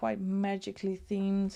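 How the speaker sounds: ordinary talk, nothing marked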